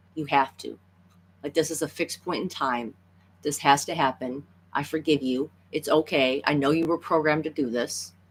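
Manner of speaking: ordinary talk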